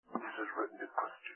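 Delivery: hushed, soft, breathy, confiding whisper. Addressing Christians about what is written to them, whispered. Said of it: "Let me whisper it".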